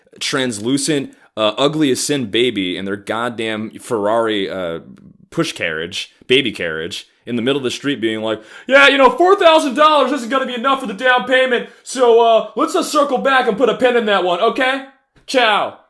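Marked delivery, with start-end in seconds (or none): 8.7-15.7 very high, loud yelling. Speaker mocking a person on a conference call in the street, mock-yelling into a phone call. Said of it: "Yelling like it's fucking Bedford Avenue".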